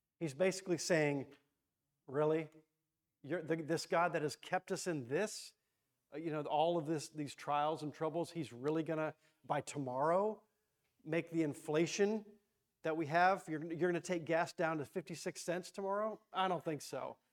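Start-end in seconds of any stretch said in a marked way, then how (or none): none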